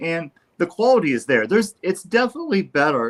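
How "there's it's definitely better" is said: voice cracking mid-phrase on one word. Speaker talking with another person in conversation, voice cracking. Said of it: "I don't know why my voice just cracked".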